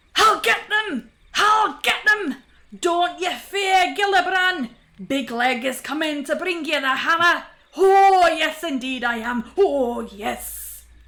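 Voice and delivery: raving, delirious shout, very loud. Reading a story where a poisoned dwarf sits up: delirious shouting. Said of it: "and starts to shout".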